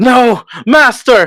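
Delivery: very high, loud, aggrieved, unhappy cry. Narrating a character protesting to his master: unhappy cry. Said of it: "he very much is not happy about it".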